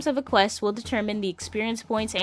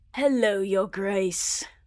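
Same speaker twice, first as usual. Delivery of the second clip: syrupy, honeyed demon voice. Greeting a visitor as the demon of the tower: syrupy demon voice. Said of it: "The syrupy voice".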